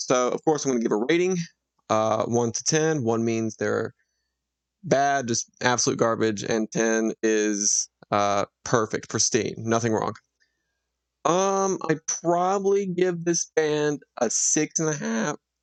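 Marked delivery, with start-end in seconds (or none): 11.9-15.3 voice cracking up high mid-sentence. Giving a band a rating from one to ten, voice cracking. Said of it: "That was a voice crack".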